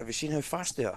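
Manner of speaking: sarcastic, mocking, ironic, fake-impressed tone. Recounting what a man said about his pit crew, retelling a sarcastic question. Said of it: "He's being sarcastic here".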